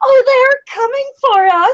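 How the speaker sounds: very high, shrill, half-screamed laughing cry. A player voicing Jessica as dogs run toward the group; high-pitched, almost screaming. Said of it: "Jessica laughs suddenly in a high-pitched uh, voice and screams almost".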